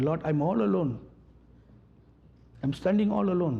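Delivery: put-on tearful weeping, pleading tone. Retelling a man's prayer overheard in his bed chamber, imitating someone crying. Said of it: "He was crying and saying".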